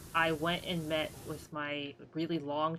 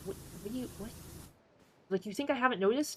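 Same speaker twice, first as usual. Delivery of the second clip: mock dumb, condescending, pitched-up talking-down delivery; 6 semitones higher than usual. Retelling a reply to condescending staff: retelling own condescending reply. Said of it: "I was a little dumb and condescending back".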